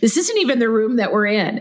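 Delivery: sarcastic, snarky, cutting put-down tone. Retelling what the program sponsor said: imitating a snarky reply. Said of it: "in a very snarky way said".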